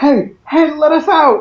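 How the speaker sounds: loud shouting, high pitch.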